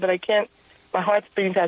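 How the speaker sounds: ordinary delivery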